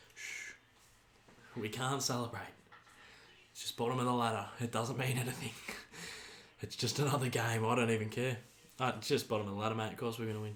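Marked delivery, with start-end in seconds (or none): 1.6-10.6 soft, sarcastic, fake indifference. Watching a match while pretending not to care: mock-indifferent sarcasm. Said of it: "me being very sarcastic".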